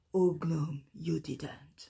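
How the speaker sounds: big, deep, dramatic trailer-style voice, drawn out. Speaker says a line the way it sounds in their head: big deep TV-series voice. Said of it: "très série euh, avec une grosse voix, vous voyez".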